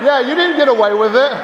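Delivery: loud, high voice calling out.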